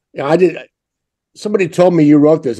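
normal talking voice

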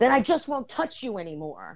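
high, swooping mock angry yell. Retelling what Ron yelled in front of everyone: imitating Ron yelling. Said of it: "he looked at me and he yelled".

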